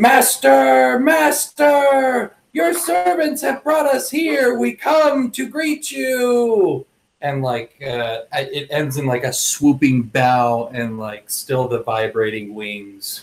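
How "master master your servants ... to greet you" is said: shrill shouting at very high pitch. Player's winged character greets the master on stepping onto land, shouting. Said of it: "and I'm shouting".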